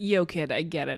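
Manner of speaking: ordinary talk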